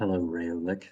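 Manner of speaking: soft, whispery character voice. In a tabletop game, greeting Rayonek in a whispering Milo voice. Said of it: "It sounds like you're whispering".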